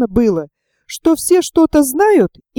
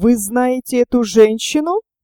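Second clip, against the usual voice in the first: plain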